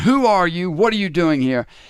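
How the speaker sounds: big resounding voice. Telling a story, voicing a Roman outpost challenging a rabbi, in a booming voice. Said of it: "he hears this booming voice".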